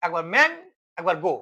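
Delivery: "mango" split into man-go with a pause.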